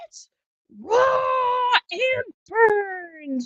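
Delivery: in-your-face yell, very high, very slow, raw. Imagining being yelled at over badly screwed-up scallops, do Gordon Ramsay yelling in your face. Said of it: "in my face yelling at me".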